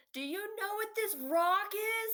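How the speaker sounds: very high-pitched, desperate yell. In an improvised scene, shouting across a mostly empty church: yelling. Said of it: "I'm yelling at this point".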